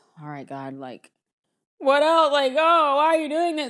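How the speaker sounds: put-on, high, self-pitying woe-is-me whine. Acting out complaining to god every time something goes wrong, mock playing the victim. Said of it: "I'm kind of like playing victim".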